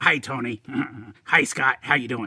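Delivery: silly, goofy cartoon sidekick voice. A character who has just come in greets the two hosts, Igor voice. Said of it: "you sound a lot like Beavis".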